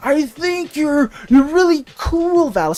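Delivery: strained, slow, throaty voice forced from the back. Imitating someone who struggles to say a compliment: imitating a strained throat voice. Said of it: "like a thra- a strained voice".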